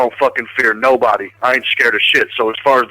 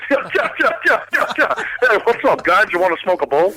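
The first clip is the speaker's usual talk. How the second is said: very high, goofy, teasing voice; 9 semitones higher than usual. Asked to impersonate the other speaker, doing his voice: Chris impression. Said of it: "Here's Chris".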